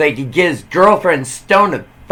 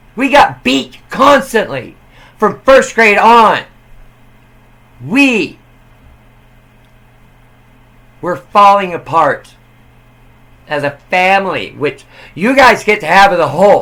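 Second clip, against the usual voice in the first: angry, pissed-off venting outburst; 4 semitones higher than usual. Addressing the listeners directly, angry. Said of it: "I fucking pissed".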